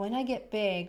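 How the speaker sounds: normal talking voice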